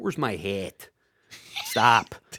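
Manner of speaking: low, exaggerated, overdone Chicago accent. Mocking extreme regional accents, the speaker gives an exaggerated Chicago accent. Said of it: "exaggerated, like when you're in Chicago".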